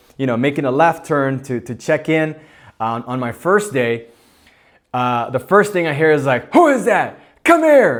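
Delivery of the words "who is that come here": put-on very high, shrill, loud, authoritative voice. Recalling walking in on the first day, the speaker quotes what he heard: imitating a commanding voice. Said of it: "It's commanding".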